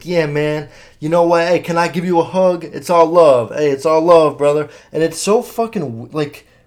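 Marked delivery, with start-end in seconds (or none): 0.0-4.7 loud, showy, fake-caring tone. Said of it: "And [name] is like, acts like he really gives a fuck".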